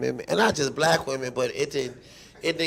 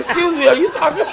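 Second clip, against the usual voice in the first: acted frightened, startled voice, very high; 13 semitones higher, 7 dB louder than usual. Retelling backing down when an ex talked tough: imitating a scared reply. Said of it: "I got scared".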